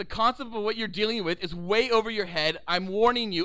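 ordinary talk, nothing marked

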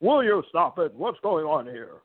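put-on one-of-a-kind, old fifties-style voice. Remembering the late backstage announcer's classic lines, doing a Mean Gene Okerlund impression. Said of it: "that one-of-a-kind voice".

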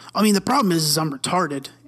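mock super serious tone. Retelling a guy who stopped everyone to say something, mock super serious tone. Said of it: "you could tell like he was being".

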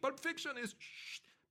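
scream, squealed up high. Retelling what a woman up in the rafters screamed at him, retelling a scream. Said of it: "and she's screaming".

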